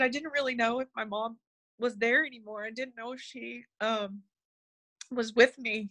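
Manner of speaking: ordinary talk, nothing marked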